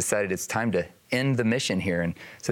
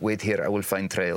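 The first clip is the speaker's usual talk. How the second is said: put-on Russian accent, curt and clipped. Recalling a whiteout on a mountain, the speaker quotes a woman: russian accent. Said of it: "she's in her Russian accent".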